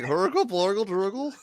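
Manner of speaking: burbling, gargled nonsense syllables, made-up words. Answering how a Greenlander sounds: mock Greenlander gibberish. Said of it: "What does a Greenlander sound like".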